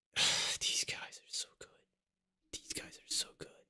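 whispered under the breath, very quiet and soft. Speaker sharing a reaction, whispering. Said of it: "I have to whisper it for some reason".

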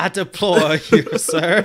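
loud, high-pitched, belted-out cartoon rooster voice. Reacting to someone's surprising voice choice, in Foghorn Leghorn voice. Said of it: "Like the foghorn leghorn".

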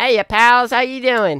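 very high, very loud squealing character voice. On stream, greeting the viewers in the Riggy voice. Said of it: "Do the Riggy voice".

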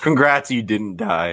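cracking, breaking voice. Speaker congratulating a group on its fifth year, voice cracking. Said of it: "My voice just cracked".

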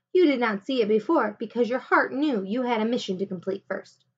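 usual speaking voice

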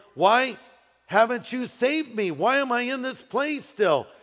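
desperate voice crying out.

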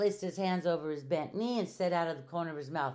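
ordinary delivery, nothing marked

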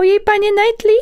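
very high, thin, little voice.

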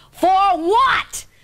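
put-on loud shout. Retelling a date when a companion questioned the check: imitating someone shouting. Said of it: "at the top of his lungs".

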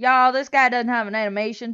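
southern drawl on y'all. Commenting on an enemy without animation, in a Southern accent. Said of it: "You sounded really southern then".

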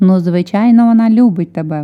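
cackling, loud blurt choked with laughter. Narrator reads Bethan's little brother behind the curtain, laughing hard while exclaiming. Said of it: "Малий аж заходився сміхом".

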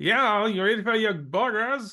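put-on Maine accent. Describing a man who is supposed to be from Maine, the speaker does his Maine accent. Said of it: "he's supposed to be from Maine. So when he talks, he's like".

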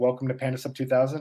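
ordinary talk, nothing marked

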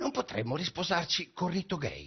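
subdued, timid tone. Asking the audience a question, said softly. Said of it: "lo dico sommessamente".

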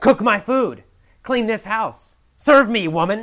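loud, high-pitched, bossy yelling.

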